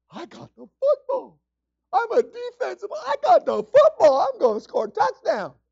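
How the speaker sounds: high, slow, thrilled voice.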